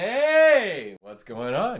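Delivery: shrill, booming, very high shout, "hey" drawn out. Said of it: "moving it up and down".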